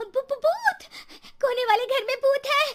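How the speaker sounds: very high, frightened, terrified shriek. Aarti sees a woman's shadow at the window of an empty house, screaming in fear. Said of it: "आरती डर से चिल्लाने लगती है".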